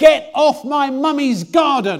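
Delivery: mock four-year-old's high shout, with full strength. Retelling how his four-year-old father shouted at a stranger: little four-year-old's shout. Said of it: "in his little four-year-old voice".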